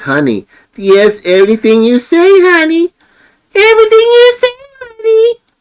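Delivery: very high, sing-song squeak, climbing upward. Mimic the woman who repeats everything he says, imitating her squeak voice. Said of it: "in that squeak voice".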